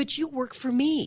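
very loud, high-pitched, insistent voice. Retelling a man's reply to post office staff, retelling a very loud voice. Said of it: "he said in a very loud voice".

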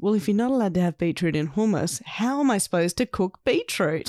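plain

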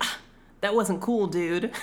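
ordinary delivery

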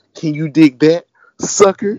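loud, forced, put-on tough hard-man delivery. Retelling what a wrestler said on a tv special, forced tone. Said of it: "She come up, she talking".

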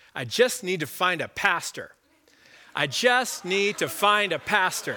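slow, exasperated, broken-record repetition. Retelling what a man nearby kept saying over and over, imitating him talking loudly. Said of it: "I hear him say loudly".

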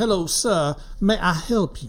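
bad fake Southern accent, slow, high drawl. Prompted to work on a Southern accent: bad put-on Southern drawl. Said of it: "Going with the drawl".

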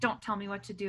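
ordinary talk

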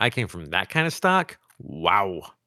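ordinary delivery

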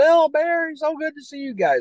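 very high-pitched, hollered yell. Recalling Jim Cornette spotting them at a wrestling convention: retelling Jim Cornette's yell. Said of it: "he starts yelling".

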